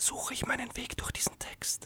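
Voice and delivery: whispered with barely any voice. Reading a German text aloud, whispered, almost voiceless. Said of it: "Flüsternd, beinahe stimmlos".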